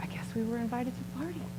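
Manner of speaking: fast, soft, wry whisper under the breath.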